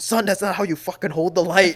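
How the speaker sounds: loud, high, mock barking dad voice. Acting out a meme where a dad yells at his son: imitating a dad yelling at his son. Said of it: "He yells at his son".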